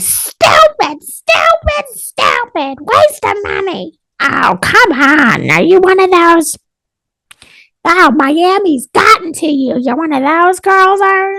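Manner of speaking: very high, slow, disapproving scolding. Retelling telling mom about Botox: imitating mom scolding. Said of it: "That's an accurate impression of my mom".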